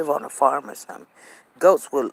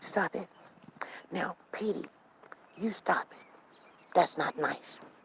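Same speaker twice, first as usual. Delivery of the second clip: soft, hushed, whispered scolding; 13 dB quieter than usual. Retelling how the owner told her dog petey to stop barking: imitating the owner scolding her dog. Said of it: "She's like".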